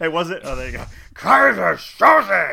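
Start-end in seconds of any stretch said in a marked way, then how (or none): 1.1-2.5 rough, high-pitched villain voice shouting. Asked on the show to do it again, doing a Kaiser Soze voice. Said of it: "do your Kaiser Soze voice".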